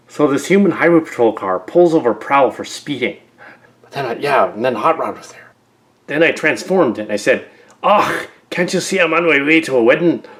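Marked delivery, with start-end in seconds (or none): 7.8-10.2 fake, put-on Scottish accent. Pulled over by a highway patrol car, the speaker retells his reply in a fake Scottish accent. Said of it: "I was putting on this fake Scotch accent".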